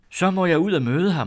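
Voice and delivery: joyful shout, very high and very loud. Told he will come soon, she jumps up from her chair, crying out happily. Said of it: "råbte hun glad".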